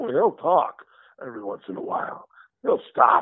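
stop-and-go halting delivery with choppy rhythm. Showing which weird voices are easier to do, in a stop-and-go Christopher Walken voice. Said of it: "has a real stop and go kind of voice".

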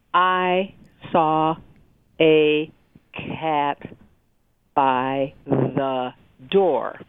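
very slow, halting, choppy word-by-word reading. Explaining reading fluency, showing how a second grader reads word by word. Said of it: "that's what we call a word-by-word reader".

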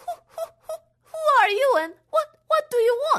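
very high, quavering, trembling stammer. Narrator voicing Yoshi speaking to a man she does not recognize, trembling voice. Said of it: "In a trembling voice, she said".

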